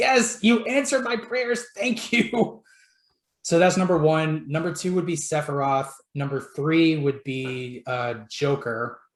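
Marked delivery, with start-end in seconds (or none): 0.0-2.6 high, overjoyed, grateful tone. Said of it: "I'm like".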